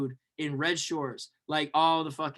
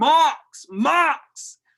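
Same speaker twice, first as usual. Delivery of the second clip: very high, very loud, shrill yell; 11 semitones higher, 8 dB louder than usual. Telling a story about spotting someone and calling out to him: retelling a yell. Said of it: "So I just yell".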